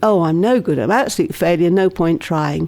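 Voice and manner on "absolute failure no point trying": normal talking voice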